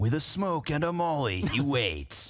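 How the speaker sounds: dramatic movie trailer narrator voice.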